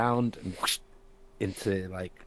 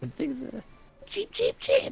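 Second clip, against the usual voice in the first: put-on bird voice, much higher, louder, faster; 5 dB louder than usual. Acting out a partner's punchline in a sales bit, in a bird voice. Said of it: "and then he'll say".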